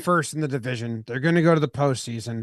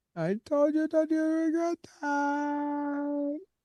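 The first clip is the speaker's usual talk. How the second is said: put-on very high, slow, stretched little old lady voice; 12 semitones higher, 8 dB quieter than usual. Repeating a line several times in an old lady voice. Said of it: "in an old lady's voice".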